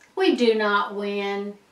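ordinary delivery

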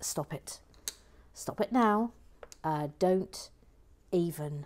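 mum-like voice. Reading out a viewer's comment that says stop it: mum warning voice. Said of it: "in mum warning voice".

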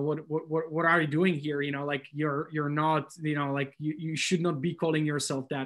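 ordinary talk

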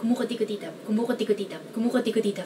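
very fast, rapid speech. Showing how to say a long Filipino word: said very fast. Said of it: "try to say it very fast".

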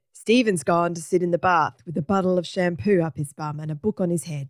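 plain

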